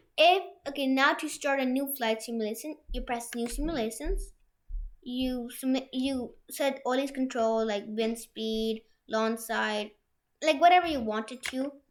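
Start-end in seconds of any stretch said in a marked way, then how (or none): 6.0-8.9 talking a little slower. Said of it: "I'll start talking a little slower".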